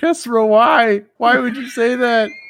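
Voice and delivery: very high sobbing, weeping voice. Role-play game player voicing his character, crying. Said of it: "he's just sitting over there crying".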